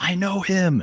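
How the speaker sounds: very high, overexcited freak-out, voice shooting way up. Retelling the Elf movie scene where Santa is announced: imitating Will Ferrell freaking out. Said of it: "Will Ferrell freaks out and says".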